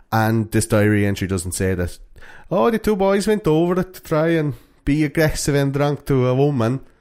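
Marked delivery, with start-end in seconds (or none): 2.5-6.8 high, put-on Finnish accent. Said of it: "a good Finnish accent".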